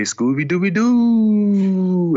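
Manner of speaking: playful, high, slow sing-song.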